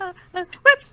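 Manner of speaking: high, loud, stammering, flustered panic. Voicing a panicking character who messed up a spell: panicking. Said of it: "She's panicking".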